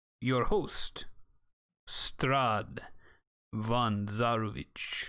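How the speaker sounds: put-on vampire lord accent. Reading aloud a letter sealed with Strahd's seal: Strahd's voice. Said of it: "Try to read it in Strahd's voice".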